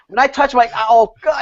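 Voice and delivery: put-on laughing through words. Retelling how someone tries to say the word: imitating someone laughing mid-sentence. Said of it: "he couldn't say the word without laughing now".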